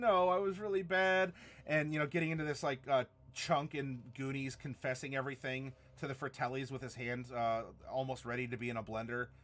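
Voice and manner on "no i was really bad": put-on little girl voice, slow, tearful sobbing. Retelling what a girl said on stage, imitating her crying. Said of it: "she starts crying on the stage".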